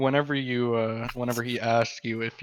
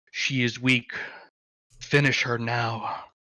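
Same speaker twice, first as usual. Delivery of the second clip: deep whispering voice, low and close. Game master voicing a voice a player hears in their ears: deep whispering voice. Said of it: "a deep voice whisper that says".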